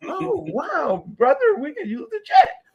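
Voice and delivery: playful, very high-pitched, swooping teasing. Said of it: "We in the clowning".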